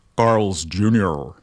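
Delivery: put-on American accent, done for effect. Naming the title of the track just played: put-on American accent. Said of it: "I have to say this in an American accent".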